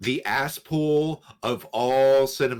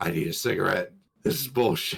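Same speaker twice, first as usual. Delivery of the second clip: mock fed-up, seething rant with rising pitch; 5 semitones lower than usual. Retelling storming out of a movie theater: retelling own fuming anger. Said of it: "You fumed".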